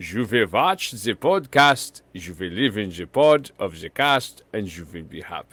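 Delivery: loud, booming, very slow proclaiming voice. Continuing the impression, telling listeners what they will do: Klaus Schwab voice. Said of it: "I could do it as Klaus Schwab".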